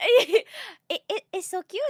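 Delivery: very high, loud, put-on light French accent. Repeating a French lab mate's quoted words to a friend, in a little French accent. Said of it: "I love your little French accent that you did".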